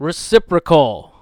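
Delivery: reciprocal said with misplaced, odd stress. Retelling how a speaker ended a sentence, imitating odd stress on reciprocal. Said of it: "There's no point where you would emphasize that word that way".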